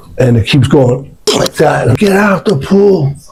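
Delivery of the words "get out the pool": high-pitched screaming, yelled. Retelling how he screamed at a girl in a pool: imitating someone screaming. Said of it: "I'm screaming at the girl".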